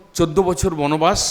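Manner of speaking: ordinary delivery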